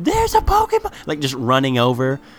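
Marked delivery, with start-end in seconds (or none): 0.0-0.9 put-on child screaming, much higher pitch. Describing teenage kids running into a field, imitating kids screaming. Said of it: "They run into a field screaming like".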